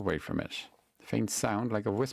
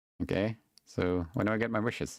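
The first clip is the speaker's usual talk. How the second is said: ordinary delivery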